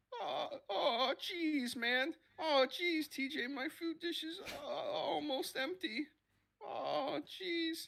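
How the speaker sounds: bad cartoon voice, very high, loud, drawn out. Doing a cartoon impression they used to do: Morty voice. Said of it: "I used to do Morty all the time. This is going to be really bad".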